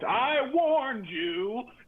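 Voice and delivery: very high screaming voice. Voicing a sword in a player's backpack that screams a warning: sword screaming. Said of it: "the sword from your backpack just screams".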